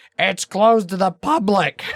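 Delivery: put-on very high elderly woman's voice. Retelling what a lady told them while they read a sign, old lady voice. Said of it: "I'm doing kind of an old lady voice".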